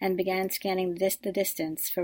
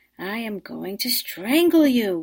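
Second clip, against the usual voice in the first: angry, loud, drawn-out bellowing roar; 2 semitones higher, 7 dB louder than usual. Maria strides through the waves toward her sister Rose: bellowing. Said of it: "Maria bellowed".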